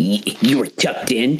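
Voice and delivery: little scornful sneer of disbelief. Voicing Molly as she looks over at Shiv: sneering. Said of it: "does a little sneer".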